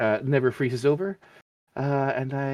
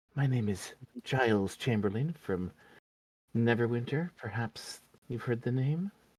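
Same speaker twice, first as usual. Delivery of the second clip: conspiratorial whisper in put-on character voice; 2 semitones lower, 7 dB quieter than usual. A roleplayer, in character, introduces himself to another character in a conspiratorial whisper. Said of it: "whisper conspiratorially".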